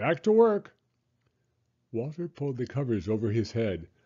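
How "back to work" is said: high, forceful shout. Reading a story, the driver revs up his bulldozer and calls out: shouted. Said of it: "he shouted".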